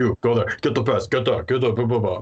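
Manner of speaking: busy, bossy, barking head-chef voice. Voicing a huge orc chef ordering students around the kitchen: busy chef barking orders. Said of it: "really busy, busy chef".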